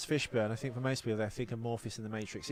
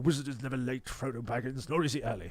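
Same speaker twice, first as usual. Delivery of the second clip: theatrical, stage-actor style voice. Showing how a great theatre actor talks on screen, in a theatrical Ian McKellen impression. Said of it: "You can kind of hear it".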